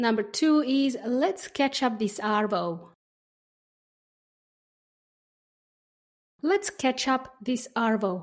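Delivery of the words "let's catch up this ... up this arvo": slow, careful, clear teaching-style delivery. Saying a phrase for learners to repeat: speaking slowly for learners. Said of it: "I'll say each phrase slowly".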